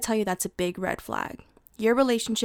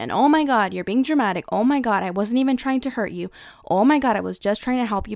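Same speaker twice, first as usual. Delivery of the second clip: put-on defensive, dismissive tone, louder; 5 dB louder than usual. Describing how a defensive person brushes off your feelings, in a mock-defensive tone. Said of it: "the person becomes defensive".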